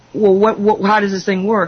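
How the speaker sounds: ordinary delivery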